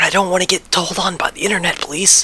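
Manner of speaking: speaking in a whisper. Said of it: "Gotta whisper this part".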